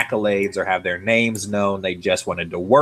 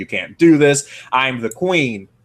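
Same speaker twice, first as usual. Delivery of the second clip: half-yelled, held-back, mildly shouty delivery; 4 semitones higher than usual. Recapping a game scene where Cersei is locked up: imitating Cersei yelling. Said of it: "Cersei yells all kinds of threats and shouts".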